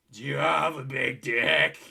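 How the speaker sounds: gravelly, creaky female voice. Retelling a woman's question to him: imitating her voice as remembered. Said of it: "I'll do her voice as it must have sounded to me at the time".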